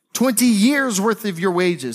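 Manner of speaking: stress on years and your, years punched in quick repeat. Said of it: "get this".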